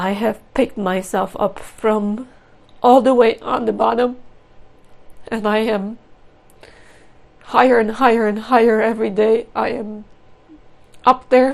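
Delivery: loud, tearful voice, crying through words. Speaking out about domestic violence and abuse, crying while speaking. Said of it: "even though I'm crying now".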